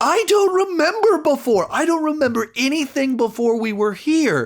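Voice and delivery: very high, shouted outburst. Retelling a scene where a character shouts at her: imitating someone shouting. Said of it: "just shouting here".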